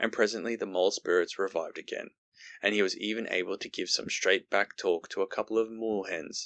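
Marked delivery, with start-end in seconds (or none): none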